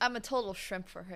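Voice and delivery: plain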